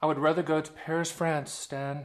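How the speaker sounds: put-on Parisian-style French accent. Imagining what the viewer would say, in a mock French accent. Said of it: "That's my Paris voice".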